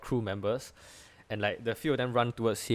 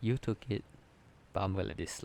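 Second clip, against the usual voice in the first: quiet whispered aside, in character; 2 semitones lower, 3 dB quieter than usual. Voicing a character bending down to a player's ear: whispering in character. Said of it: "he whispers to your ear only".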